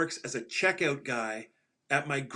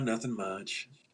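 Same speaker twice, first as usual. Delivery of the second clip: mock dismissive, low, soft, couldn't-care-less offhand tone; 5 semitones lower, 5 dB quieter than usual. Retelling how a worker answered when asked what he was up to, mimicking a dismissive reply. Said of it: "he sort of dismissively goes".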